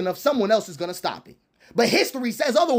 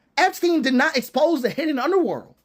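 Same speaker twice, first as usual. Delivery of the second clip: normal talking voice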